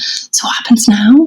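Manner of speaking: hushed stage-whispered voice. At the front of a wedding, asking one of the groomsmen, retelling a whispered question.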